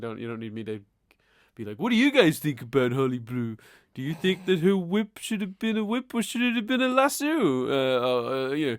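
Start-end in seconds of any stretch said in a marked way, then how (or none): 1.8-8.8 grating vlogger tone, squeaky and high. Imitating a YouTuber asking viewers questions: irritating YouTuber impression. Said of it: "your impression of that guy was irritating".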